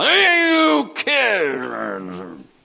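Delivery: furious, rough, rasping, swooping angry shout. Retelling how a father yelled at kids over the rail: imitating an angry father. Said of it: "there's this angry father leaning over the rail".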